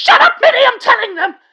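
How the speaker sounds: very high, shrill, loud, flying-off-the-handle angry snap. Mid-rant about a friend skipping Kingdom Hearts, snapping at someone interrupting: angry outburst. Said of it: "sorry for flying off the handle like that".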